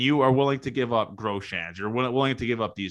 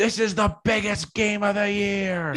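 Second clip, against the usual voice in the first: scream, higher pitch; 11 semitones higher than usual. Retelling a drunk fan yelling between pitches: imitating a fan screaming.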